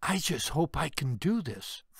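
soft whisper. Reading a story, a soldier alone before training says: whispering. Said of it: "Fran says in a whisper".

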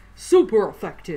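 loud game announcer-style call-out. Recalling a game narrator's line, Pokemon Stadium narrator voice. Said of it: "I always remember him saying".

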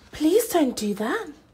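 gasped out, very high pitch. Narrator reading a character's plea as something reaches for her star, gasping. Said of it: "Ori gasped".

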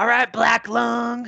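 put-on growl, very high, slow, rasping, creaky. Retelling a player greeting another on a server: Micah voice. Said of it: "he did, like, the Micah voice".

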